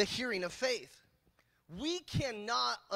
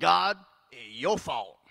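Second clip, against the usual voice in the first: loud, sarcastic, accusing tone; 7 semitones lower, 8 dB louder than usual. Acting out people complaining to god: imitating sarcastic blame. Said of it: "we're doing it sarcastically".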